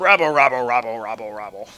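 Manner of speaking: low, grumbling crowd rabble voice. Answering a question, then mocking the forums' reaction, impression of the forums. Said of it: "That was my impression of the forums".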